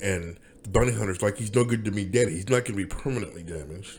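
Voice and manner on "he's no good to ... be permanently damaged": ordinary delivery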